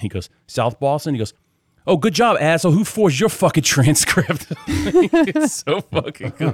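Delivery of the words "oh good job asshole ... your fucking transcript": restrained, half-hearted, acted-out yelling. Acting out one character yelling at another, retelling a yell. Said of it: "he's like yelling at another Wahlberg".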